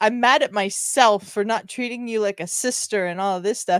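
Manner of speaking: ordinary talk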